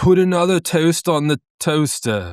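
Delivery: Australian accent drifting British. Speaker practices an Australian accent while another person judges it; Australian accent leaning British. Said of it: "that was leaning more British again".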